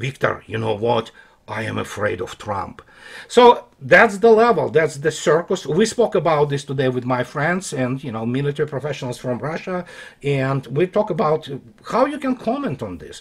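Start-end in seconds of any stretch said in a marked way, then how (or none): 0.0-2.8 very low, hushed, confidential murmur. Imagining a private remark during a visit to Moscow: Putin in confidential lowered voice. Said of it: "in confidential manner and with the lower voice says".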